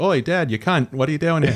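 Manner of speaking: put-on high cartoon kid voice. Retelling a six-year-old's Bluey impression as a dumb bit: Bluey impression. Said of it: "So she'll be like".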